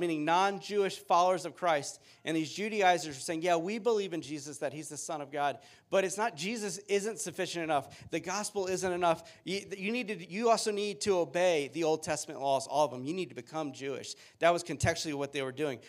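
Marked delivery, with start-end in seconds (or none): none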